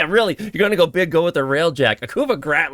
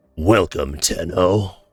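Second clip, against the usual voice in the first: movie trailer announcer voice, pitched lower; 8 semitones lower than usual. Streamer, asked for a movie trailer voice, greets the audience in a movie trailer voice. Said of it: "You want that for a movie trailer voice?".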